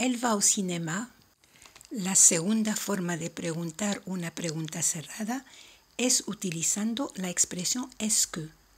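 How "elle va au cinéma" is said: voice climbs at the end of "cinéma". Teaching a French closed question, pitch rising on cinéma. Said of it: "una entonación subiendo la voz al final de la pregunta".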